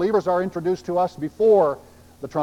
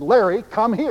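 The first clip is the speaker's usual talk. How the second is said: play-acted strict, commanding shout at full voice; 4 semitones higher than usual. Telling a story, the speaker quotes a woman calling larry down the stairs: retelling a stern, loud call. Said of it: "she spoke to him very sternly and very loudly".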